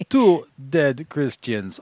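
put-on vampire counting voice. Describing a man who hisses when he speaks, Count from Sesame Street voice. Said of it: "He talks like that guy".

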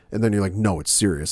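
ordinary talk, nothing marked

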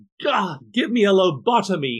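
long, high, dragged-out, drawn-out scream. Retelling trying to meditate in college: imitating own past scream. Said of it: "I just screamed out".

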